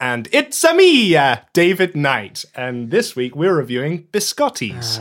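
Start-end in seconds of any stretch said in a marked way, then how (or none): 0.0-2.5 high, loud cartoon video-game hero voice. Introducing himself on a podcast in a Mario voice. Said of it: "It's Mario".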